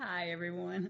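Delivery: weary, tired, very quiet voice. Guest greeting everyone after the host introduces her, very tired. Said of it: "And very tired, too".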